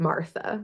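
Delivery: very soft, barely above a breath.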